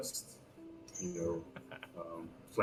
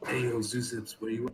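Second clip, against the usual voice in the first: hushed, whispered; 4 semitones higher than usual. Player character crouching and looking around, whispering to zoozips. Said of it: "and whisper like".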